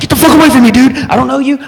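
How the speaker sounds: high, loud paranoid panicked yell. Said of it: "I was fucking paranoid as fuck".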